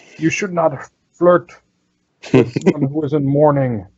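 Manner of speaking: high shout in an ogre-woman voice. Game master voicing an ogre who turns toward a player, as an ogre woman shouting. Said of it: "she turns towards you and she shouts".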